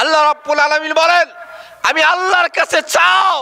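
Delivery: high, fast, fervent preacher-style cry.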